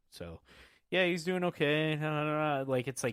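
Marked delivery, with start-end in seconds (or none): 0.1-1.9 bored, uninterested commentator voice, totally bored. Mocking a basketball commentator calling a dull game: bored Richard Jefferson voice. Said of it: "that boring".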